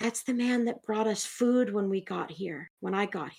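soft, hushed half-whisper, kept close. A narrator voices Sella, who grabs Tab's hand and half-whispers. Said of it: "and whispers".

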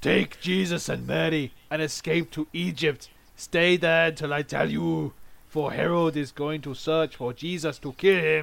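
read aloud in a cartoon hero voice. Speaker reading a scripture passage aloud, a listener reacting: sounding like El Nombre. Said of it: "You sound like El Nombre".

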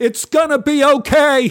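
very high, very loud, shrill, drawn-out yell. Recalling a drive past the old school, the speaker retells her yell out the window. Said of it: "she rolled down her window and yelled".

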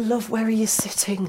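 high, hushed, kindly whisper.

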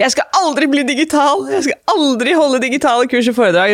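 mock furious outcry, angry shout pitched high. Recalling what was declared aloud when the calendar went empty: retelling an angry shout. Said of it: "ropte jeg ut".

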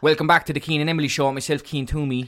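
quick, broad Cork accent. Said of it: "if I wanted to talk like this".

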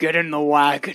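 low, growling orc voice. Game narrator voices an orc addressing the player, growling orc voice. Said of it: "One of them growls at you".

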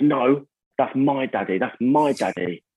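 very slow, possessive, insistent, defensive delivery. Retelling how his son protested at another kid: imitating Teddy sounding defensive. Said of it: "Teddy was all defensive".

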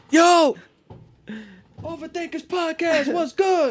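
very high, loud, hyped shouting yell. Imagining doing the podcast in the street: pretend yelling. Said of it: "Just yelling".

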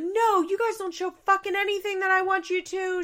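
acted, very high, loud, furious yelling. Retelling Amber's phone call to the producers, imitating Amber yelling. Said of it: "She starts yelling".

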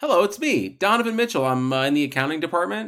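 high put-on chipper voice.

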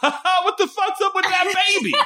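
very high yell breaking through laughter. Speaker recounts what they yelled out when something happened, retelling a laughing yell. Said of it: "I just yelled it when it happened".

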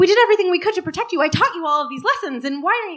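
words tumbling out very fast, rapid-fire, high-pitched. Recalling a performance, the speaker acts out a parent's lines, talking really fast. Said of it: "talking really fast".

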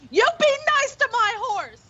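very high-pitched shouted yell. Retelling what they yelled at a man running off, retelling a yell. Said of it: "but I yell at him".

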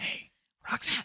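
unvoiced, secretive whisper.

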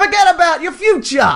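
put-on New York accent. Asked by a co-speaker to say the line again, in a New York accent. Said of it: "Can you do it in your New York accent?".

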